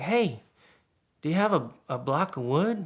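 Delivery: put-on calling out, yelling. Retelling what a guy called out while fixing a Jeep: imitating someone yelling. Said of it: "the guy yells out".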